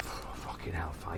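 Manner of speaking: soft, exasperated whisper.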